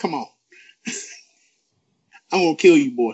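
low, deep, dropped voice, warning tone. Watching a wrestling match, voicing Keith Lee's thoughts to his opponent: voicing Keith Lee. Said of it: "Just like".

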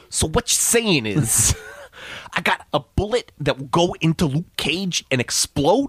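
put-on lisping voice, high-pitched and slow. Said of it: "Let me get my [name] voice really quick".

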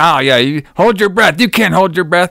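small, mild, held-in scream. Recounting a scene as water rises over Harry, retelling a scream. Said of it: "he's like screaming at him".

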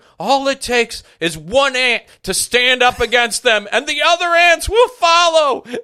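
shrill, very high, loud drawn-out scream. Retelling how a man without a mask screamed movie lines: imitating someone screaming. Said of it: "he's screaming lines from that".

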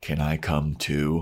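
slow, eerie, unsettling, creepy voice. Recounting how Xander puts his pool stick down and asks, retelling Xander's creepy ask. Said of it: "in the most creepy way possible goes".

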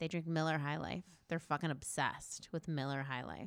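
grave hushed tone. Retelling what a woman revealed about a group she hung out with; lowered voice. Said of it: "she lowered her voice".

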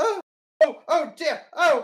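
shrill, very loud, very high, drawn-out panicked cries. Voicing a woman having a panic attack after a scream: panicked screaming. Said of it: "having, like, a panic attack, and she's going".

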